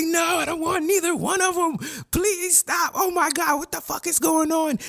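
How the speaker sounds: very high, panicked, acted-out pleading tone. Retelling a scene where Nami begs them to stop: imitating someone freaking out. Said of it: "Nami's really freaking out 'cause she's like".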